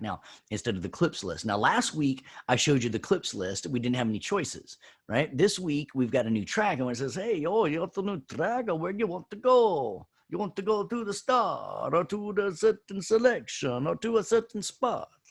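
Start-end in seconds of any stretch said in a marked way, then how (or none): 7.1-15.1 poor, fake Italian accent, very high-pitched. Voicing what the program says on screen, in a bad italian accent. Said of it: "That was not a very good Italian".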